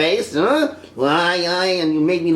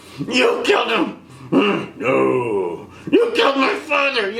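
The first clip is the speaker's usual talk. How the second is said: put-on rage, much higher pitch; 2 semitones higher than usual. Recounting Luke's encounter with Vader, imitating Luke's rage. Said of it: "He was all like angry, all this like rage".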